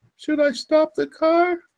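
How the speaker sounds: trembling, shaky, very high-pitched voice. Narrator reading a joke where a student driver asks a question, shaky voice. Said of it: "he asked in a shaky voice".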